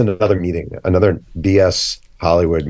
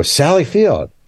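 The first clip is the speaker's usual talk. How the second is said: very high, yelled-out call; 10 semitones higher than usual. Retelling spotting an older woman in a parking lot and calling out: retelling a yell. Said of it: "I just yelled out".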